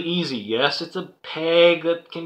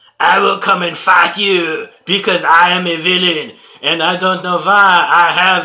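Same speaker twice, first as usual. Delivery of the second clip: very bad put-on French accent, louder; 4 dB louder than usual. Voicing a villain toy who challenges the heroes: very bad French accent. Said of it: "very bad, very bad f-, accent, French accent".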